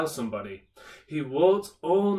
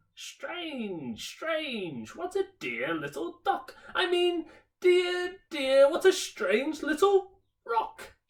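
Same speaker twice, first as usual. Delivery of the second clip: tiny, funny, squeaky, very high mouse voice. A mouse talks to itself beside a sleeping father, funny little mouse voice. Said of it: "a funny little voice saying".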